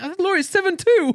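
very high, exasperated mock squeal.

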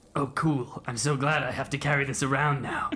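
put-upon, sarcastic grumbling. Handed an eye stalk to hold, the shadow creature drifts out and responds: Tail voice. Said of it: "I'm a type of dragon, I'll have you know. Descended from dragons. / He goes, / (opening words) Hold very still. I'm about to cast the incantation. No. Hold fast, traveler. Something's gone wrong. We'v".

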